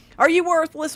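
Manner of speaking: furious yelling. Retelling own insults at a computer program: imitating own angry shouting. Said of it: "I'm shouting at a program".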